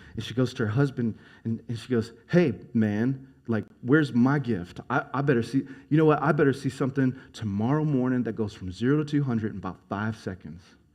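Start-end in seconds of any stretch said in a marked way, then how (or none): none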